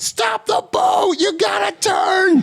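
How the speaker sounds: very high, very slow, drawn-out screaming yell. Retelling a movie scene where a skier calls to the boat: imitating someone screaming. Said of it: "who is screaming at them".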